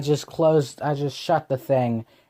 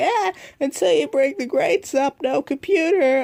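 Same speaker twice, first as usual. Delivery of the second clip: very high, nagging, scolding parent voice; 12 semitones higher than usual. Retelling a rule the parents set: imitating parents. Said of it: "that's probably my best impression of my parents".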